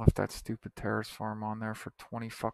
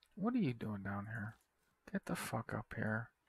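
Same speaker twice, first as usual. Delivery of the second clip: irritated, fed-up muttering under the breath; 6 dB quieter than usual. Speaker tells someone to get up here from down there, annoyed. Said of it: "You can tell I'm annoyed right now".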